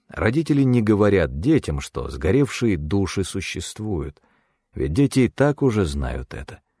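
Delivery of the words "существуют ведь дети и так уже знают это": ordinary delivery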